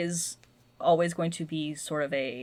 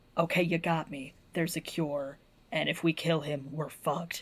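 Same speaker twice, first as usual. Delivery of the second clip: mock gravelly growling voice. Retelling a TV show scene between two characters, in a gravelly Batman voice. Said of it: "the grovelly kind of shit".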